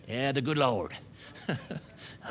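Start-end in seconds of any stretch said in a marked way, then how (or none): 0.1-1.0 put-on American Southern accent. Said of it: "I talk in a Southern accent".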